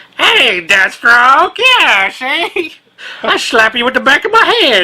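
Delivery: put-on old-fashioned 1930s style voice. Playing the Flash toy answering Deathstroke, old-timey 1930s Flash voice. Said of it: "you're very slow, and you're from the nineteen thirties".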